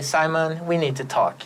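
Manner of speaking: ordinary talk, nothing marked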